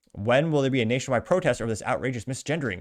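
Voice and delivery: ordinary talk, nothing marked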